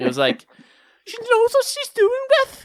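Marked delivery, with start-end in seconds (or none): 1.0-2.7 scouse Liverpool accent, pitched way up. Recalling a past job, the speaker shows off a Liverpool accent. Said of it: "I could do like a Liverpool accent".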